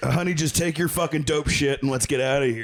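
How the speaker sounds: rushed, irritated, fed-up, impatient tone. Retelling a story, acting out a man snapping at a woman, mock-annoyed. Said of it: "he was more pissed she was taking longer".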